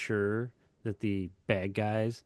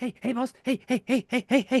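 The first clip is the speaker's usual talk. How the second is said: very high, loud, yappy little cartoon dog voice; 14 semitones higher, 6 dB louder than usual. Imitating the little sidekick dog from the cartoon. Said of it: "he's like that little dog on the cartoon".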